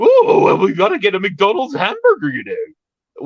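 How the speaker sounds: shrill, very loud, very high swooping cartoon sing-song. Recalling a character from a fast-food advert: Ed Wynn voice. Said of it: "which is the Ed Wynn voice".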